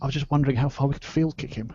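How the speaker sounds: hushed, quiet half-whisper. In a tabletop game, a player's character murmurs about the mighty wizard, half-whispered aside. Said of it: "a whisper to sort of into".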